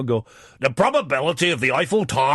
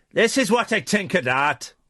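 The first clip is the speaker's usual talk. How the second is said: put-on Irish accent, higher pitch; 6 semitones higher than usual. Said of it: "don't do the voice".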